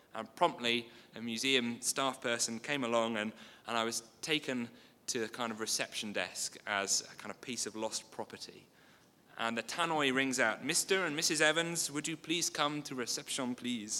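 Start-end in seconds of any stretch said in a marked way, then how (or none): 10.6-14.0 put-on French accent in announcer style. Retelling a museum tannoy calling his parents to reception, in a French accent. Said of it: "Sorry about the French accent".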